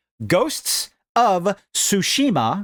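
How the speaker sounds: slow, careful word by word. Listing top-ranked games, repeating a title for the listeners, said slowly. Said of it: "I'm going to say it slow".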